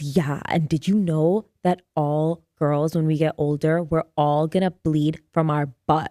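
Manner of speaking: put-on girlish gossiping whisper. Speaker retells a hallway moment in third grade, quoting her, retelling a gossipy whisper. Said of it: "she was like like whispering, gossiping".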